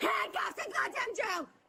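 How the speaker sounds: loud screaming and yelling. Demanding that Helen be put in jail: screaming obscenities. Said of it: "she's just screaming, like, nonsense obscenities".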